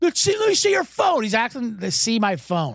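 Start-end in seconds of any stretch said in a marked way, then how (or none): 0.0-1.2 mock yelling, much higher pitched. Retelling how a drunken heckler who thought they reported him yelled at them, retelling a yell. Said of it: "he yells at us".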